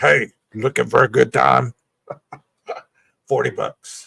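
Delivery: cartoon character voice. Joking about a hotel video where Minnie Mouse approaches you, deep Minnie Mouse voice. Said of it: "Has that deep voice too".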